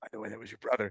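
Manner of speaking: monster-like voice, in character. Imagining the dragon opening its eye at the very end: Glaurung voice. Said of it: "He opens his eye and just goes".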